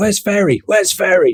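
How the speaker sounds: mock high shout. Retelling a pilot calling out for a crew member: imitating someone shouting. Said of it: "as the pilot was shouting".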